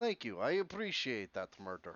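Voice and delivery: put-on Russian accent. Speaker plays along with a Russian-accent bit; fake Russian accent. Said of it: "you should do the whole episode in a fake Russian accent".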